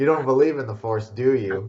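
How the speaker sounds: patronising, condescending, talking-down know-it-all tone. Retelling a Family Guy scene where Luke turns off his lightsaber: mock-condescending, as Luke. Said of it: "goes all condescendingly".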